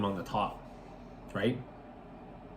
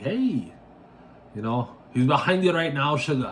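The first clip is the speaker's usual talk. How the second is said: higher-pitched fake Jamaican accent. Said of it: "the girl with the fake Jamaican accent picks up and it's like".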